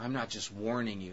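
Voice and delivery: normal talking voice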